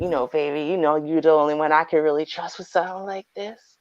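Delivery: put-on smooth, low extra-bass smooth-talker voice. Acting out a man sweet-talking a woman: imitating a man's smooth extra-bass voice. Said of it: "He puts a little extra bass in his voice and goes".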